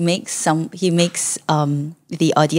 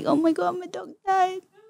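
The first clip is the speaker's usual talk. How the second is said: very high, soft, put-on weepy voice, fake sobbing; 13 semitones higher, 6 dB quieter than usual. Showing how to cry on cue while tearing: acting tearful. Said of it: "and then you think about something sad".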